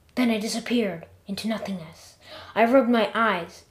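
ordinary delivery, nothing marked

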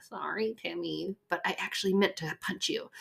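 soft, grudging, mumbled delivery. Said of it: "And you're like".

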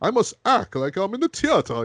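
very high, swooping, stagey British thespian voice. Describing a favorite character, doing a Clayface British thespian voice. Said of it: "he sounds like this British thespian, so he's like".

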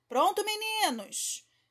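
bright, cheerful, very high-pitched voice. Narrator reads a character calling to the boys in a lagoon fight, cheerful voice. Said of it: "a voz alegre de Peter disse".

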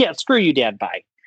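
ordinary delivery

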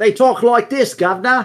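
put-on Cockney urchin accent. Describing a game race by imitating how they talk: cockney urchin voice. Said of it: "Dredgers are basically the Cockney urchins".

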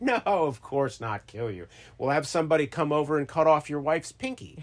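ordinary talk, nothing marked

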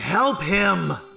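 loud yelling, shouting. Voicing a character calling out for someone to be helped: yelling for help. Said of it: "she starts yelling".

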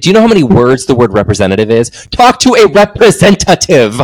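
put-on irritated, angry, fed-up, insistent tone. Retelling what is said to a phone robot: retelling own angry words to robot. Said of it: "I get so angry at the robot".

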